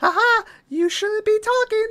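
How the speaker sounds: very high-pitched talking toy doll voice. Retelling a movie scene, the speaker voices Chucky's mocking reply in a Chucky doll voice. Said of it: "in the like doll voice".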